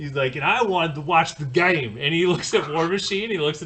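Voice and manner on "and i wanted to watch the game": put-on New York accent, louder. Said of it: "kinda Jersey accent, well, Bronx".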